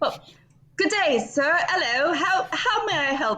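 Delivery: put-on gritty working-class British accent. Voicing a character greeting a stranger: gutter british accent. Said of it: "gutter British is what you're doing".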